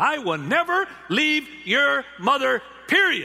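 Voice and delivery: loud, passionate declaration. A father retells what he told his six-year-old son: raised voice. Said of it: "And I raised my voice and I said".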